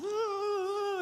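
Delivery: very high, stretched, drawn-out puppy-voice ooh. Imitating the puppy put in time out: Winston impression. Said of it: "that was my best Winston impression".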